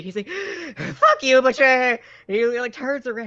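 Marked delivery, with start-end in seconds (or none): 0.3-1.6 loud, heavy-breathing, winded, pitched up. Voicing a character who wakes from being a statue: acted heavy panting. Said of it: "comes to breathing heavily, panting".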